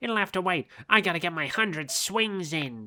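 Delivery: put-on mantis creature voice. Voicing Scyther's in-game lines aloud: Scyther voice. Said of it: "I'm doing the same fucking accent again".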